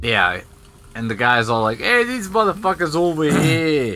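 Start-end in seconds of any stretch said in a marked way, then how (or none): 1.8-4.0 put-on Boston cab driver accent, pitched up, drifting toward New York. Retelling a boston taxi driver's words in a put-on boston accent. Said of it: "my Boston went a little too New York".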